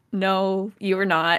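ordinary talk, nothing marked

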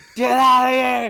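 mock loud, high yell.

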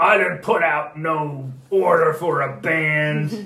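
deep, rough, gravelly rumble, loud and booming. Voicing someone inside answering visitors at the door: low gravelly voice. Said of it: "This kind of low gravelly voice".

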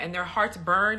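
ordinary talk

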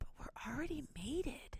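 very quiet, high, hushed secretive whisper. Recapping a TV proposal scene, retelling a whisper. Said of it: "And she whispers like".

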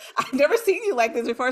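shocked exclamation, high and loud.

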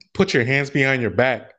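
ordinary talk

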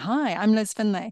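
smiling while speaking. Warming up the voice before unmuting on a video call, smiling while speaking. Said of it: "And I'm smiling".

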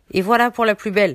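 put-on old woman voice, loud, gloating, cackling sneer. Narrating an old woman as a girl falls as if dead; sneering cackle. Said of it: "ricana la vieille".

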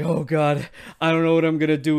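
acted-out panicked freaking out. Acting out a card game hero in a tight spot: acting out freaking out. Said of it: "He's, like, freaking out".

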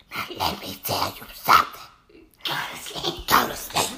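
whispered shout, hushed but fierce. Retelling how a teacher crouched down beside them and spoke, retelling a whisper-shout. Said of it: "started whispering, shouting at me".

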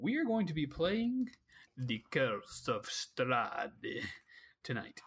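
put-on creepy, spooky vampire delivery. Game master announcing tonight's campaign to the players, in a vampire voice. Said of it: "Was that your vampire voice?".

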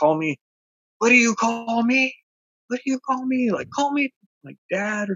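very high, crazed, rising screaming. Describing a video, the speaker imitates a man screaming at a child. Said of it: "he's like screaming at the child".

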